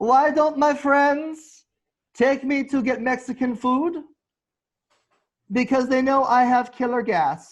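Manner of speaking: shrill, loud put-on voice, belted high and slow. Stand-up joke delivered as an impression: Adolf Hitler voice. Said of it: "in my best Hitler voice".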